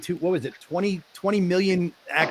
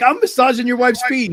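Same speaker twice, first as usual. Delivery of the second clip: put-on drunk man yelling, higher and louder; 8 semitones higher, 7 dB louder than usual. Retelling how a drunk man yelled at Devin in the lobby: imitating a drunk man yelling. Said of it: "He got super drunk, was yelling at Devin".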